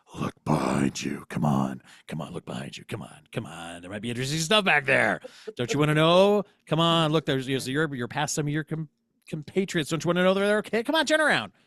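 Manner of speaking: mysterious, tempting, loud sing-song coaxing voice. Speaking as a voice the listener hears: coaxing mysterious voice. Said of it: "You hear a voice saying".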